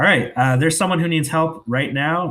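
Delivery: put-on stern, high tone. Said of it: "very, you know, stern about this".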